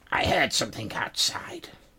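put-on old crone's voice, cracked, heavy and age-worn. A game master voices a woman heard from inside a room: cracked, aged woman's voice. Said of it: "this one sounds sort of cracked and weighed down with age".

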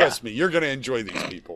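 normal talking voice

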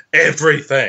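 dramatic stress, every word set apart for effect. Reading a passage aloud, 'everything' set between dashes: dramatic emphasis on 'everything'. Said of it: "I say it like that because it's in between two dashes. I figure it's for dramatic effect".

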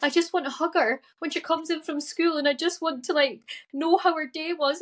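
mock tearful pleading. A mother recounts a meeting with her daughter's psychologist, retelling her crying. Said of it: "I'm crying".

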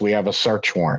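plain

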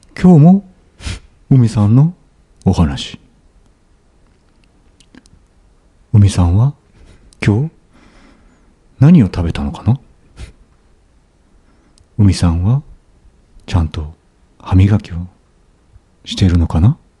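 whispered voice. Answering a request to whisper, saying goodnight: whisper voice. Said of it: "ちょっとささやいてもらっていいですか？".

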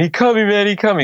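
very high screaming cry. Telling about a bleeding man at a show: retelling a scream. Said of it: "So he's screaming".

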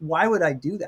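normal talking voice

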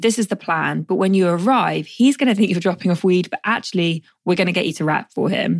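ordinary delivery

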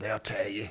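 quiet, hushed voice. Retelling his reply to a man asking why he's not at the races, quiet voice. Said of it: "In a quiet voice. ... You know, like that right there".

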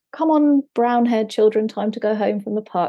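plain

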